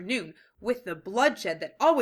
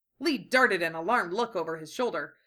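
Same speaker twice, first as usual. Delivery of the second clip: usual speaking voice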